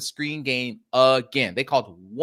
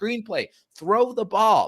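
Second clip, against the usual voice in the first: loud, high-pitched screaming; 6 semitones higher than usual. Speaker recounting what they screamed at their team, retelling a scream at the team. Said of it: "I was screaming at my team".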